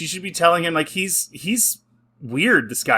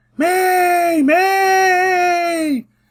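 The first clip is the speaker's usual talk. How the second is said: high, loud scream. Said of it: "he starts screaming".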